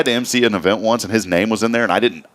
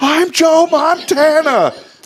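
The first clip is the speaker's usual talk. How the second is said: put-on, very high, shrill, loud, teary wailing scream; 5 dB louder than usual. Recalling the listener throwing a ball over the house, imitating a tearful scream. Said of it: "it was like this tearful scream".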